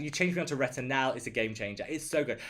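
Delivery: ordinary delivery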